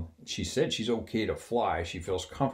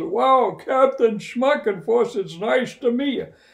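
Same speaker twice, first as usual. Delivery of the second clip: mock shouting, much higher and louder; 11 dB louder than usual. Retelling a flight attendant meeting the captain, quoting her reply: imitating someone shouting. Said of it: "They're standing there shouting at each other".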